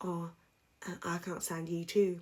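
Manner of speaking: soft, hushed half-whisper under the breath. Retelling someone's reply in an argument: imitating a half-whisper. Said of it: "Why did she whisper".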